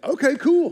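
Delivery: put-on high-pitched, easygoing, go-with-the-flow kid voice.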